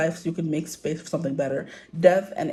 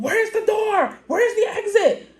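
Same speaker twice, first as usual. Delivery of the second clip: put-on high, frantic woman's screaming; 4 dB louder than usual. Retelling a lady in the aisle, the speaker imitates her screaming. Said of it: "this lady who starts screaming".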